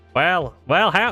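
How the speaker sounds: put-on silly American accent. Answering a chat request to do an american accent: stereotypical american accent. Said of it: "that kind of really stupid accent".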